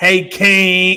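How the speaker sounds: put-on falsely cheerful voice. Explaining fake positivity, imitating a sarcastic fake-positive greeting. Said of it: "you know how they sarcastic with it?".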